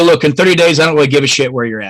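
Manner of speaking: kind of sarcastic, half-joking jabbing tone. Retelling what the speaker always tells clients: retelling a sarcastic remark. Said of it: "I say this kind of sarcastically".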